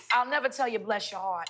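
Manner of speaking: put-on American Southern accent. Praising a dish after asking to use a Southern accent. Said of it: "Can I say this in my Southern accent".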